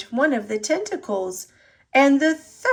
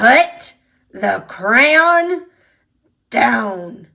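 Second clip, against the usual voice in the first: loud, growling monster voice; 7 dB louder than usual. Reading a story where the monster Gabe speaks to Emma, Gabe growling. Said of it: "as he growled".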